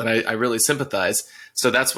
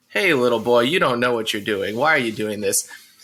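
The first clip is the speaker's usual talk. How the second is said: mocking, put-on condescending tone. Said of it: "people walk up and it's just like".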